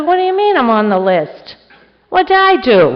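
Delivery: loud, very indignant voice. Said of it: "I got very indignant".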